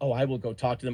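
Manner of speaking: put-on detached, impersonal tone. Retelling April's reply to the accusation: imitating a detached HR tone. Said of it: "Like she was H R".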